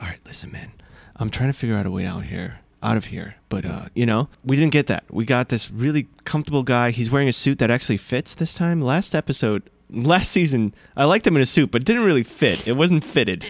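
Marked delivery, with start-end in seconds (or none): 0.0-3.3 soft, hushed whisper under the breath. Imagining what a show character might say in secret: imitating a character whispering. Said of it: "whispering every so often".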